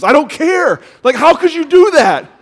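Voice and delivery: acted very high indignant anger. Retelling what a man's wife said after waking from a dream, mock-angry wife. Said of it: "like literally angry".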